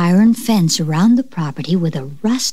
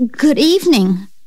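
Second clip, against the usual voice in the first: shaky, trembling, unsteady voice, pitched up; 7 semitones higher than usual. Reading a haunted house story, the narrator answers a ghostly voice's greeting: shaky voice. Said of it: "I said in a shaky voice".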